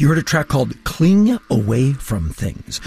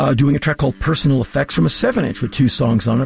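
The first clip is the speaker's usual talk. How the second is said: ordinary talk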